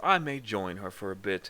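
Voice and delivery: plain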